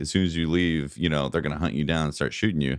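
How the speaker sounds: plain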